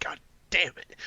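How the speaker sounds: whispered, barely voiced, soft and under the breath. Teasing a friend about getting mad while fishing: imitating someone whispering. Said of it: "'cause you just whisper".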